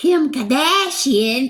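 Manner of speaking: high, exaggerated, bad fake Boston accent. Mimicking how she says a name, imitating a fake boston accent. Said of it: "I'm going to try to say it like she says it".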